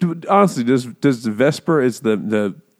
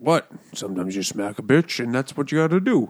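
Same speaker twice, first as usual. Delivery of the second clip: put-on Scottish accent, quieter; 5 dB quieter than usual. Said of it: "that Barbara Walters thing".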